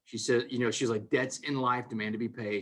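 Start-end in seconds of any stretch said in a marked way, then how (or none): none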